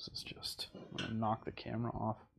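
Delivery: whispering under the breath.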